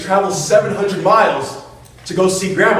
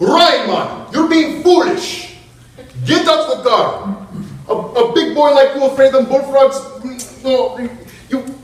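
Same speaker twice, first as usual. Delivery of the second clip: put-on thick, broad Jamaican accent, high and slow; 6 semitones higher than usual. Retelling how grandma scolded a scared grandson, thick jamaican accent. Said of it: "in her thick Jamaican accent".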